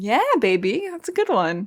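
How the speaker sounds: mock fake enthusiasm, sarcastic, swooping sing-song delivery. Reacting to their own joke with a co-host listening, sarcastic. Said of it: "it seems like you're being sarcastic".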